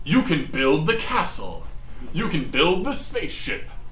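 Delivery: put-on announcer voice. Mimicking how the ads aimed at boys sound: commercial announcer voice. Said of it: "like I'm gonna try to do the voice".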